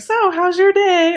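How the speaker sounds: acted very high, bubbly, super cheerful happy voice. Retelling how the lady at the bank greeted: imitating a super happy greeting. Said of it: "All super happy".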